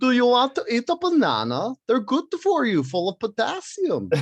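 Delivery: very high-pitched, sing-song Swedish accent. Showing the Swedish accent picked up from Thor's mom in a show, Swedish accent. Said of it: "I focus on to get the Swedish accent".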